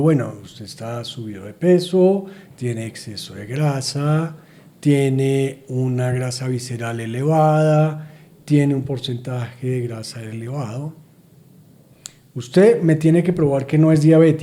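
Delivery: ordinary talk, nothing marked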